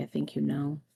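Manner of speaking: whispering. Voicing a character who closes her eyes and answers: whispering.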